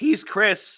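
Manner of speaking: cracking voice. Signing off the show, the speaker names his co-host, voice cracking. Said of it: "I just voice cracked".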